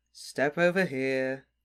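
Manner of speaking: bored, uninterested, going-through-the-motions tone. A security wizard tells an arriving visitor to step over, in a bored voice. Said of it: "said the wizard in a bored voice".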